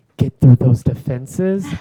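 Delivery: half-whispering. Reminding someone of what they talked about, half-whispering. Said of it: "As I'm whispering".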